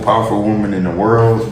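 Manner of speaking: usual speaking voice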